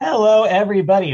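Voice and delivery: voice cracking on "hello". Greeting everyone at the start of the show: voice cracking. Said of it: "a little voice crack to start the show".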